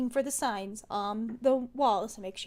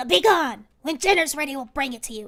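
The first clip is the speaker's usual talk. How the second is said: loud snarling creature voice; 2 semitones higher, 6 dB louder than usual. Narrating a game scene, the storyteller voices a creature snarling at the player: snarling creature voice. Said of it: "it sort of snarls at you".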